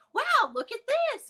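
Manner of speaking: very high, cheery, soothing, happy voice. Showing how they calm him when he's scared without picking him up, in a put-on happy voice. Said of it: "Like in a happy voice".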